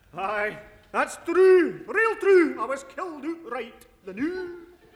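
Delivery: put-on Scottish accent. Radio sketch character telling of a ghost: phony Scots accent. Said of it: "his phony Scots accent".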